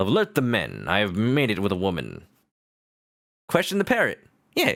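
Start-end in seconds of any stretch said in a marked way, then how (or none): 0.0-2.2 swooping animated character voice, wide pitch swings. Quoting a cartoon line in a Zapp Brannigan voice. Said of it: "a Zap Brannigan voice".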